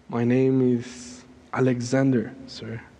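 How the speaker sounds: humble, submissive, meek voice, spoken slowly. Retelling a soldier's answer to his questioning commander: imitating a meek reply. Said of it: "the soldier meekly said".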